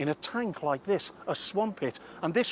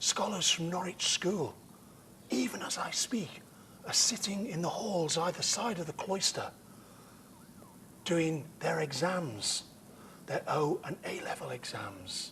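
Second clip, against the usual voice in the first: hushed whispering voice; 2 semitones higher, 5 dB quieter than usual. Speaking by a cloister while students sit exams nearby, whispering. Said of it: "the reason I'm whispering".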